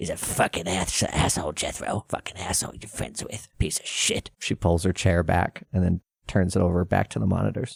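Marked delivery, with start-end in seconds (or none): 0.0-4.3 soft whispered aside, close to the ear. Narrating a scene to a player, voicing a woman who leans in whispering. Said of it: "she whispers in your ear".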